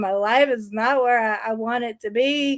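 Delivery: sobbing, crying, tearful voice. Retelling crying on turning fifty: imitating own past crying. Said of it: "I'm just crying, going".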